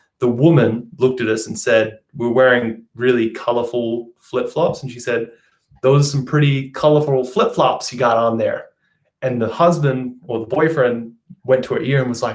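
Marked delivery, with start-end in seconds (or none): 5.8-8.7 best attempt at a put-on American accent. Quoting what a woman said to them, in a put-on American accent. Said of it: "I'll try and put on my best American accent".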